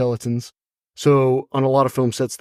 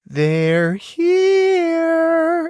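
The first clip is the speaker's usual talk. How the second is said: very high, swooping, drawn-out put-on voice. Guest answering the host's greeting on location: Heather O'Rourke voice. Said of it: "in my best Heather O'Rourke voice".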